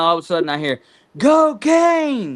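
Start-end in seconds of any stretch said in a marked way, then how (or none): 1.2-2.4 shrill, very high, loud yell. Retelling how a guy behind the speaker yelled out the window, retelling a man yelling. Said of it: "he's yelling out the window".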